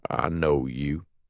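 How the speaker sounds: even, flat, toneless delivery. Reading a novel aloud, the narrator voices Snake's line in a flat voice. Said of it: "Snake says in a flat voice".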